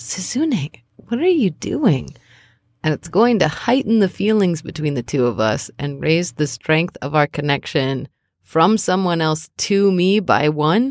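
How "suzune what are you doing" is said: voiced stage whisper. Role-playing, placing a tiny hand on Suzune's and appealing to her, half-whispering.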